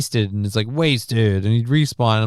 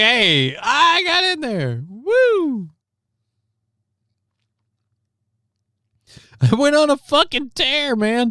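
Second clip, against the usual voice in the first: mock thrilled, excited voice, higher pitch; 13 semitones higher than usual. Imagining what the man in the mugshot would say: imitating his excitement. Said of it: "he's like".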